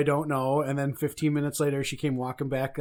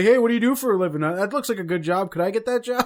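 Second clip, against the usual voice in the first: loud screamed hollering; 7 semitones higher, 7 dB louder than usual. The speaker retells a stranger screaming questions at them, retelling someone screaming. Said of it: "someone screaming at me like".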